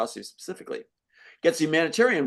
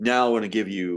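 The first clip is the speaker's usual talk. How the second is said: award-show announcer voice; 8 semitones lower than usual. Describing a humanitarian award presentation, imitating the announcer in an announcer voice. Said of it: "you have the announcer going".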